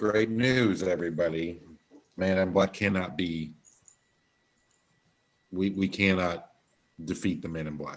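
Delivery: sarcastic, falsely upbeat, mock-cheerful tone. Announcing news to the party in character: sarcastic. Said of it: "I'm saying this sarcastically".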